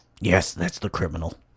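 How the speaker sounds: low, rough, gruff voice. Narrating a scene where a character identifies the criminal, gruff voice. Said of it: "in a gruff voice".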